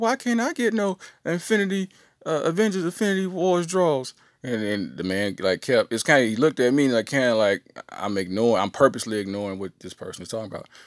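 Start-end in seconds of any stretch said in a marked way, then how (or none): 0.0-4.1 mock-pleading little boy voice, much higher. Retelling a young boy asking an old man on the phone, imitating a pleading little boy. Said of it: "the little boy's pleading".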